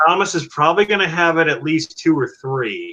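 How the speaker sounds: plain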